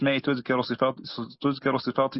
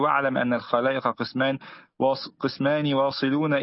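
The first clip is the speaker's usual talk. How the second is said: plain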